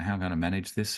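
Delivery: ordinary delivery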